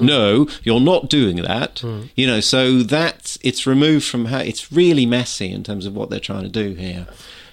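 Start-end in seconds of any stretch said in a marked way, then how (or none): 0.0-1.8 slow, condescending, patronizing male voice. Recounting a film scene, the speaker quotes a male character, in a mock-patronizing male voice. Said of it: "in a kind of patronizing male voice".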